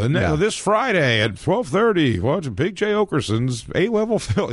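high TV network promo announcer voice-over. Speaker recalling the TV commercial for his hour special, Comedy Central announcer voice. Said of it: "you hear that Comedy Central voice".

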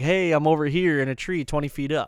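plain

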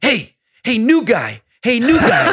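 high, swooping put-on yell. Retelling how a host called out to him: imitating someone yelling. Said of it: "he's yelling".

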